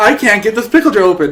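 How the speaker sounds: mock calling out, called out. Retelling a tv scene where he yells out in a lobby: imitating someone yelling out. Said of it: "he just yells out in the lobby".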